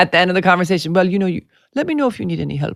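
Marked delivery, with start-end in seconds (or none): 0.9-2.8 put-on Italian accent. Quoting his dad at the end of a conversation, imitating dad's Italian accent. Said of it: "I can't talk about him without doing his accent".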